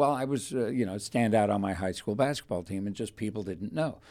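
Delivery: ordinary delivery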